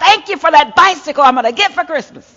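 really loud, very high-pitched holler. Speaker retells how he prayed loudly at dinner, retelling a really loud yell. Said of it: "Really loud".

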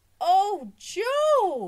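very high, very loud effusive gush, one word drawn out. Holding up a man's sock for everybody to see, she is gushing. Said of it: "she gushed".

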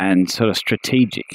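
normal talking voice

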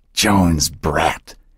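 hissing the words. Reading a story, a woman hisses two words at her grandson; hissed. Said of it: "Emily hissed the two words".

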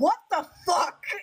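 put-on disbelieving outcry, high and sudden. Retelling spotting a book in a bookstore: imitating own past yell. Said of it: "And I yelled".

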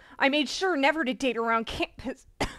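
plain reading voice

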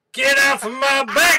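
very high, loud shouting. Acting out a shouted catchphrase for the others: imitating s1 shouting. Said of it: "an impersonation of me?".

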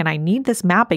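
ordinary delivery

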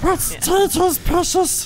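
very high, slow, squeaky voice.

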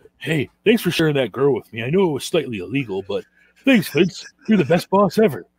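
dopey slow-talker voice. Mocking a wrestling executive thanking his boss Vince, slow-talking John Laurinaitis impression. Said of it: "He sounds like a fucking like slow talk".

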